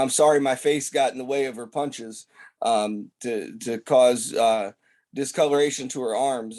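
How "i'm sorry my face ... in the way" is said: ordinary delivery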